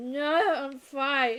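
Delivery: mock drowsy half-asleep voice. Retelling waking up to reply to friends: imitating own half-awake voice. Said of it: "half awake go".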